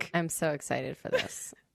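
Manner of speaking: imitated flat deadpan. Retelling how Kelty said how excited she was, imitating Kelty's deadpan. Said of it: "with the most deadpan, flat affect".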